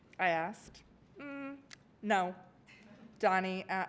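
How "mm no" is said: play-acted, level, higher-pitched deadpan tone. Retelling a student's refusal to stop whispering: imitating Donnie's flat reply. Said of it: "Donnie said flatly".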